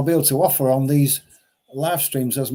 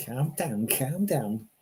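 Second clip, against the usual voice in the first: very quiet, hushed, put-on Scouse accent; 10 dB quieter than usual. Speaker trying a best Scouse accent for a listener who is a Scouser. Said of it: "My best Scouse accent".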